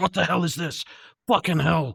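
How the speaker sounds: gruff character voice. Narrating a scene, the speaker voices a man who has just run over, gruff voice. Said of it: "in his gruff, gruffy voice".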